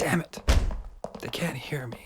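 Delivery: breathy, hopeless, despairing whisper. Finding that the people outside cannot hear the knocking: despair in the voice. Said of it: "Quite like the despair in [name]'s voice there".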